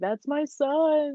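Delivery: play-acted anguished wailing scream, high howl, "son" drawn out. Speaker recalling a heartbreaking ending; imitating Cedric Diggory's father screaming. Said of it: "screaming at the end".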